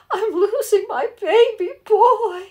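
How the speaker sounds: very high, very slow, drawn-out tearful weeping wail. Retelling a crying mother-in-law on the swing set: imitating mother-in-law crying. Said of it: "that's the way she talked".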